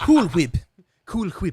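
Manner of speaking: loud, high, swooping little cartoon voice, belted out. On a stream with a guest, doing the Stewie voice. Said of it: "I could do the little Stewie voice there".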